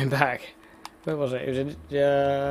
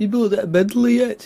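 terrible put-on Liverpool accent, pitched up; 7 semitones higher than usual. Quoting people who had weird accents: terrible liverpool accent. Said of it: "That was a terrible Liverpool".

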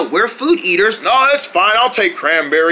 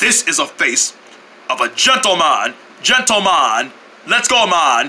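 put-on low boy's voice with a Jamaican accent; 4 semitones lower than usual. A character arguing with others about their guest, in a Jamaican accent. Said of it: "So sound like a Jamaican boy".

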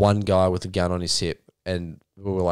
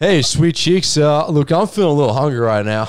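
put-on very loud hollering in an American accent; 8 semitones higher, 8 dB louder than usual. Asked to imitate a Yank ordering from the waitress: Yank ordering impression. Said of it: "Can you do your best impression of a Yank ordering".

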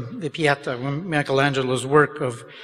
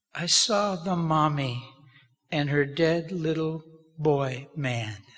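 slow, deeply sad put-on little child's voice; 4 dB quieter than usual. Retelling a two-year-old's answer while driving away: imitating a child's sad little voice. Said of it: "with deep feeling and sadness in his little voice".

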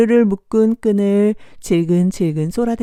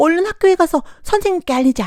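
scared, frightened voice with a high pitch; 9 semitones higher than usual. Narrator reading a children's story, voicing the deer, in a frightened voice. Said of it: "겁먹은 목소리로 말했어요".

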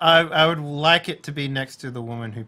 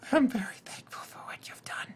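hushed, whispered near-whisper; 8 semitones higher, 7 dB quieter than usual. Playing a character turning to a woman as everyone settles in: hushed tone. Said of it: "I say to her in a hushed tone".

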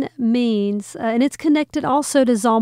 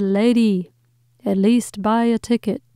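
usual speaking voice

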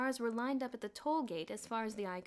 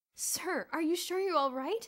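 worried, anxious voice, pitched up; 8 semitones higher, 7 dB louder than usual. Bruno asks someone he calls sir, anxiously. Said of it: "Asked Bruno anxiously".

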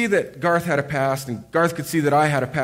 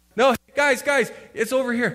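put-on raised shout, pitched higher, projecting over noise; 8 semitones higher than usual. Retelling a friend shouting directions across a crowded ski slope, retelling a shout. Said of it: "Jeremy would shout".

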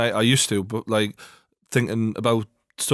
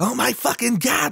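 put-on thrilled, very high, drawn-out excitement; 13 semitones higher than usual. Retelling a YouTuber's reaction to unboxing an early PlayStation, imitating Boogie very excited. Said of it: "and he's very excited".

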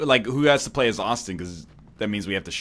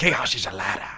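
put-on nobleman voice with a hissing 'shh'. Repeating the line after another person's attempt, doing a Petyr Baelish impression. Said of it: "You got the shh going real good there".

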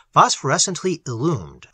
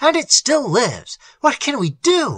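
hoarse with excitement, pitched up; 9 semitones higher than usual. Algernon shouts to his companion that the creature still lives: hoarse with excitement. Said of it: "His voice was hoarse with excitement".

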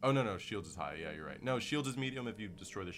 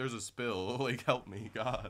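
mock heartbreak, high, cracking, desperate voice; 5 semitones higher, 4 dB louder than usual. Retelling a woman telling Peter there's a spill, mimicking a heartbroken woman. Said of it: "there was heartbreak in her voice".

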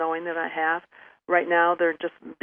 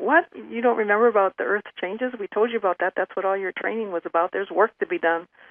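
acted offended disbelief, insulted, indignant; 3 semitones higher, 3 dB louder than usual. Retelling how he reacted when she asked why he was back, mock-insulted. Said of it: "And he was like insulted".

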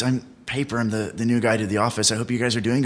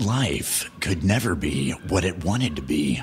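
lower-pitched epic movie trailer narrator voice; 6 semitones lower than usual. Taking a turn in a movie trailer voiceover-off, movie trailer voiceover. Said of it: "Movie trailer off?".

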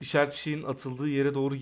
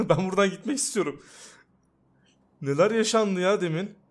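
growing frightened, much higher pitch; 5 semitones higher, 4 dB louder than usual. A gamer reacts to something strange that just happened in the game, getting scared. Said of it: "Şu an korkmaya başladım ya".

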